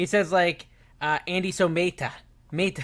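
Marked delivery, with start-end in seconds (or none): 1.3-2.8 put-on Spanish accent. Imitating how Sonny says Andy's name: imitating Sonny's Spanish accent. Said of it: "he's saying it with a Spanish accent".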